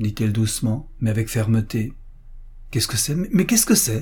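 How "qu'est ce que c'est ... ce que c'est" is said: high, rushed, stumbling stammer. Rebuked by the young woman for her tone, she stammers in reply. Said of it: "balbutia Madame Gerbaud".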